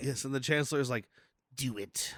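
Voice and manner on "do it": sinister, evil, villainous put-on voice. Imitating the Emperor urging Anakin on: evil Emperor voice. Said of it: "He gets into his evil Emperor voice".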